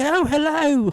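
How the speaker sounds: high, loud put-on British accent. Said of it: "talking, like, British".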